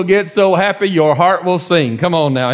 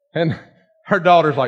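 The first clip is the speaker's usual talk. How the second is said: ordinary talk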